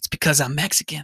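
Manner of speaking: imitated whispering. Retelling a coworker's line to the main boss: imitating a whisper. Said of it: "and whispers to him".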